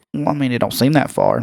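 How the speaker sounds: ordinary delivery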